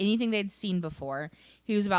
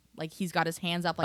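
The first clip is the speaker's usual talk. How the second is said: normal talking voice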